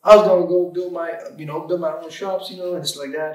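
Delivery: terrible fake Southern accent. Retelling what the coach said about building shops: terrible Southern accent impression. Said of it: "I do the most terrible impersonation of Southern accent".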